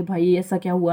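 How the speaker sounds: ordinary talk, nothing marked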